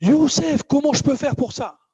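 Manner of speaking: eager, high-pitched, loud delivery.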